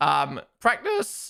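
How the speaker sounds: cracking voice. Going through last year's testing times, voice cracking. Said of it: "Oh, voice crack".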